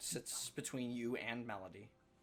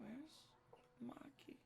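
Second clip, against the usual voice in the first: faint, barely voiced, breathy, very quiet whisper; 14 semitones higher, 11 dB quieter than usual. Voicing a silent girl asking where maki is: whispering. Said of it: "when I'm doing whispering".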